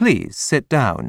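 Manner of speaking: ordinary delivery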